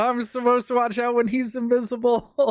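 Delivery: mock, very high-pitched, shrill and loud scream. Retelling being attacked by an invisible enemy: retelling own scream. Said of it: "And I screamed".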